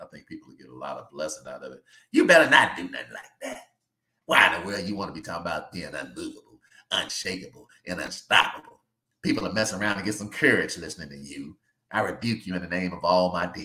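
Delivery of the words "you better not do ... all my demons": storybook wicked witch voice. Acting out a phone call, answering as Wicked Witch of the West voice. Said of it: "The wicked witch of the west".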